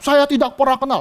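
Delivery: put-on heated, indignant tone. Telling a bible story, voicing a man confronted by a servant girl: acting out an angry denial. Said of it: "Dia marah".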